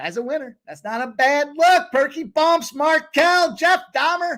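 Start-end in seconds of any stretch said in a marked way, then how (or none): 1.9-4.4 high-pitched, loud yelled shout. Reading out viewer names in a shout-out: yelling. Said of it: "I'm yelling Jeffrey Dahmer".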